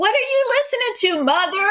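mild put-on yell, high.

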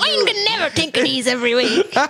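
squeaky put-on voice. Speaker imitates Bob to the others, a little bit squeaky Bob impression. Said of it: "Probably a little bit squeaky".

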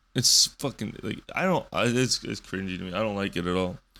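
ordinary talk

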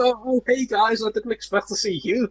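whiny, sniveling villain voice, high and drawn out. Retelling a TV villain's lines to other speakers: imitating a sniveling villain. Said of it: "he's like a sniveling villain where he's like".

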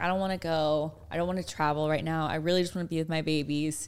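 ordinary delivery

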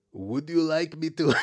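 put-on botched, off-target French accent. Quoting a man on the episode, attempting a French accent: Borat-sounding accent. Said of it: "It's Borat".

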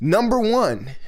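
loud, high, showy game show host delivery. Speaker listing ineffective ways to pray to an audience, game show host voice. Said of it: "I sound like a game show host".

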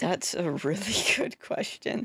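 tearful voice on the verge of crying. Asked how you've been, answer sounding about to cry. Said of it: "You sound like you're about to cry saying that".

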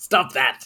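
mocking, parroting, teasing tone. Parroting the other player's protest back at them: mocking echo of another player. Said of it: "you better quit it".

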